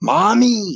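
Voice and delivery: shrill, very high top-of-the-lungs scream. Retelling a childhood fright, calling for mom: retelling a scream for mom. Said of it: "screaming at the top of my lungs for my mom".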